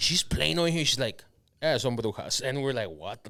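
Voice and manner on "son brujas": put-on nonchalant, very natural casual delivery. Retelling what a woman said to the group, imitating a casual tone. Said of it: "she said it very, like, fucking".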